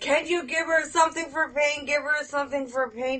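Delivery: mock angry insistence. Retelling the dad getting mad at hospital staff: imitating an angry dad. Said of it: "getting mad at the people".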